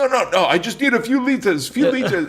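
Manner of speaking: put-on Israeli accent. Retelling a man siphoning gas from his tank, in a thick Israeli accent. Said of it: "he's Israeli and he's got this thick accent".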